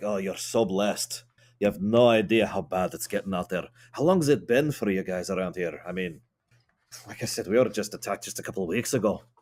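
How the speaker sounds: very relieved, openly showing relief. Voicing a character who answers someone, acting very relieved. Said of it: "I'm gonna act very relieved".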